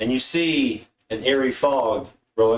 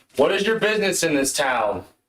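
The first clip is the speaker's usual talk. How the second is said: pitched-up, demanding challenge voice; 6 semitones higher than usual. Voicing an archer on the rooftops who calls down: loud voice. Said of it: "you hear a loud voice that says".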